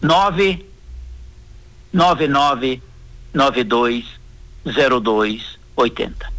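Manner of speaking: very slow, low, spaced-out words. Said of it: "vou falar bem devagar".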